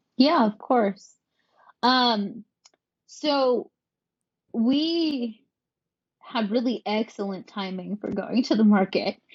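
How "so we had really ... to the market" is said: heavy sarcasm, very slow, we drawn out. Answering how the product entered the market: sarcastic tone. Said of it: "if you can sense some sarcasm in my voice".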